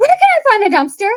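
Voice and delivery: breathless, winded voice. Retelling asking an old lady for a dumpster: imitating being out of breath. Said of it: "out of breath at this point".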